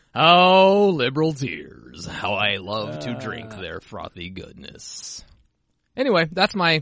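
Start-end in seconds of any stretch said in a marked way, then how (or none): 0.2-5.3 very slow, drawn-out, gross creepy put-on drawl. Talking about WoW with another speaker, slipping into a gross put-on voice. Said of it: "That was a pretty gross voice".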